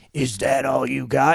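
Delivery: low, gruff, rough villain voice, taunting. Describing a music video, quoting the bad guy's challenge in a bad guy voice. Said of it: "the bad guy is like".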